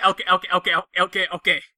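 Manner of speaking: put-on fast New York voice. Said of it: "Joe Pesci in Lethal Weapon two and three".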